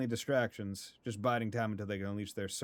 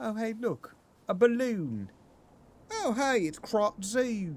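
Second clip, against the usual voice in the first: high, slow, silly goofy put-on voice. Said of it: "I don't know why I'm talking like this, but it's kinda funny".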